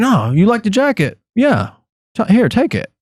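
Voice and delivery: put-on high, offhand, easygoing, friendly older-sounding nonchalant voice.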